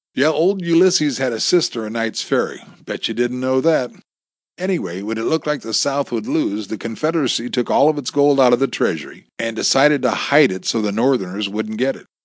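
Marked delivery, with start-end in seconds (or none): none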